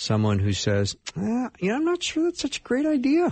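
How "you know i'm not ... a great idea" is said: voice jumps up suddenly, very high-pitched. Acting out a dissenter raising a doubt: voice going up in pitch. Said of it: "my voice went up all of a sudden".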